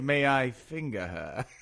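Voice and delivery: put-on archaic old English accent, very slow. Speaker retelling a man's bit, in an old English accent. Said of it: "doing this voice of like like an English, like old English".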